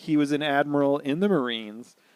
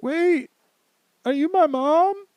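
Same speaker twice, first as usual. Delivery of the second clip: put-on very high-pitched, weeping, tearful voice; 5 dB louder than usual. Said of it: "starts crying".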